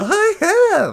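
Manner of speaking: very high-pitched, comedian-style delivery. Repeating the other speaker's words back: imitating a Seinfeldian delivery. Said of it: "it was very Seinfeldian".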